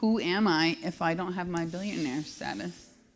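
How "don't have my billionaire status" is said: ordinary talk, nothing marked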